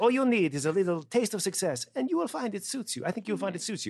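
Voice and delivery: horrible put-on French accent. Quoting Monique's line from a film: bad French accent as Monique. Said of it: "My French accent is horrible".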